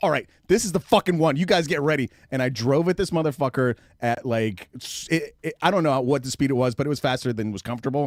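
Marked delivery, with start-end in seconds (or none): 0.0-2.1 acted angry shouting outburst, higher and louder. Retelling getting angry after many driving retakes: imitating own angry outburst. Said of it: "I finally got pissed and I was like".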